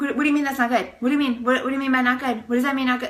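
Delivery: fast, rattled-off, freaked-out, panicked speech. Retelling own panic at a nurse's remark: imitating own panicked voice. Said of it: "because I was freaking out".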